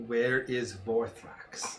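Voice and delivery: whispering. A tabletop player's character pins a green dragon and speaks into its ear, whispering. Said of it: "whisper in its ear in Draconic".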